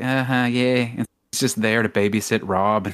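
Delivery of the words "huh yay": put-on bored comedian voice, lower pitch. Imitating a celebrity who would rather be elsewhere: Adam Sandler, unenthusiastic. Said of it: "Adam Sandler's like".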